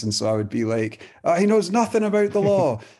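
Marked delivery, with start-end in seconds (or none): 1.2-2.8 mock, very high-pitched, heckling yell. Recalling a take where they shouted at someone across the room, retelling own shouting. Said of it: "I just shouted".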